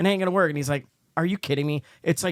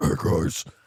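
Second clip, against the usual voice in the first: put-on very deep, scary voice, lower; 10 semitones lower than usual. Retelling what a famous giant sounded like: imitating Andre the Giant's very deep voice. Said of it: "his voice was so fucking scary 'cause it was, like, the deepest".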